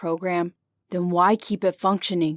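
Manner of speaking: ordinary delivery, nothing marked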